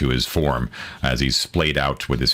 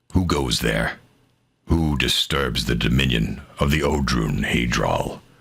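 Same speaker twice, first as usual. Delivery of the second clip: deep, low man's voice calling out from a distance; 2 semitones lower than usual. Narrating a scene, voicing someone calling out from a distance: low male voice. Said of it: "you hear a low male voice call out".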